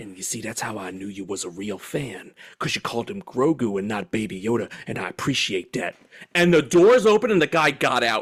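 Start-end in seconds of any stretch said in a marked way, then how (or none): 0.0-5.9 earnest, low, intense, up-close delivery. Retelling a stranger who leaned in close in an elevator: imitating an intense stranger. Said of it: "He gets real close to me and he goes".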